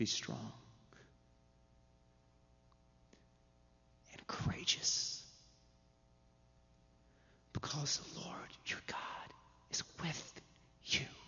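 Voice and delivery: hushed, breathy near-whisper, hard to make out. Imagining what the late scientist would say to his family: soft Rick Smalley voice. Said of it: "transition back into that soft, hard to understand Rick Smalley voice".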